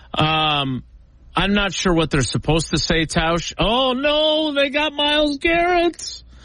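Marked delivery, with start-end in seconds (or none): 3.5-6.1 high-pitched mock dismay. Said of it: "you were kind of mocking it".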